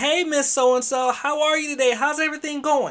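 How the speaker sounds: hollered, very high, extremely loud voice. Retelling how he greeted a ranting woman to get her attention: extremely loud greeting. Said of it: "I said it extremely loud".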